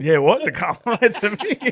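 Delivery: high, loud laughing speech.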